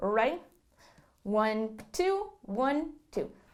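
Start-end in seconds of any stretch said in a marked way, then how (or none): 1.2-3.3 faster and quieter delivery. Leading the practice count again at a faster tempo: faster counting.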